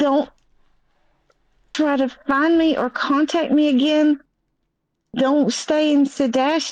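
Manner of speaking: mock out-of-breath speech. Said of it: "he sounded like he was running".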